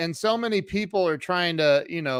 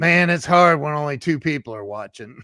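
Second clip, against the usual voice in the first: put-on male voice, loud and raised; 5 dB louder than usual. Retelling what Grant said, trying a Grant impression. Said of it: "let me try to do my Grant impression".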